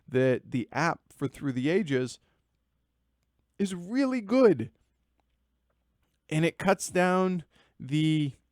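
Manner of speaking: words broken up by hiccups. Speaker talking about board games, mid-sentence, with the hiccups; hiccuping. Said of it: "I got the hiccups".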